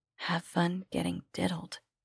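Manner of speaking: whispered. A woman delivers a parting remark, whispered. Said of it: "she whispered".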